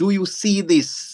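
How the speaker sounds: very slow, drawn-out, high-pitched scream. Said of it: "as if you're screaming at them".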